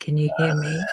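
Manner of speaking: subdued, low-key voice, kept down. Speaker on a call keeps it down because someone is in bed, quiet voice. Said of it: "I'm trying to talk in a quiet voice".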